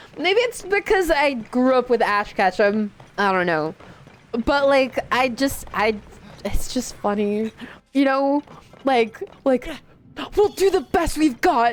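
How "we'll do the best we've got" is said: corny, cheesy anime hero protagonist voice. Talking about a favorite voice to do, the speaker shows off an anime protagonist voice. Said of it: "the anime protagonist voice".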